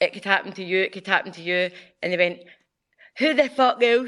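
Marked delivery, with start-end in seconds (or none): 3.2-4.1 piss-taking, high, put-on Scottish accent. Retelling people quoting the speaker's own words back, mocking scottish accent. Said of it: "They try and do a Scottish accent and take the piss".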